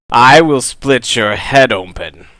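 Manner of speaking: loud shout. Narrating a game scene where the players hear a voice, shouting. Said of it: "you hear a voice that shouts".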